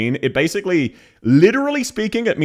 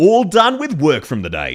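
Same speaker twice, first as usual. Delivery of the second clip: Australian-accented delivery; 3 dB louder than usual. Showing how a game voice line would sound australian: australian accent. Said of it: "That is how it would sound Australian".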